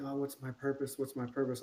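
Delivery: normal talking voice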